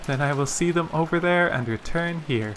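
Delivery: plain reading voice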